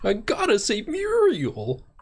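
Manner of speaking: put-on little dog voice. Imitating how a cartoon dog says a name: Courage the Cowardly Dog voice. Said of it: "in his little dog voice".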